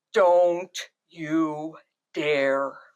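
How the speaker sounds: deep, loud, slow, booming delivery. Retelling the voice that came out of their larynx, [name]'s low masculine loud voice. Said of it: "real low masculine pitch loud voice".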